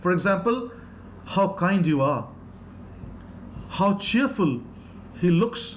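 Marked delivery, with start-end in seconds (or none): 1.2-5.8 restrained, subtle, understated exclamatory tone. Teaching exclamatory sentences, giving a soft, subtle exclamation as an example. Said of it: "We can be very, very uh, subtle, soft, and still be uh, exclamatory in nature".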